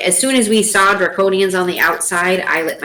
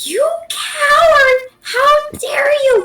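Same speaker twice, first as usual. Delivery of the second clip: taken aback and shocked, pitched higher. Voicing a character taken aback by a coward: shocked accusation.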